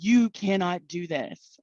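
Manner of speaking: mock slow, drawn-out, echoing angel voice. Retelling what an angel told the speaker at twenty-one: huge, echoing voice. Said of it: "in this huge voice that like echoed through my soul".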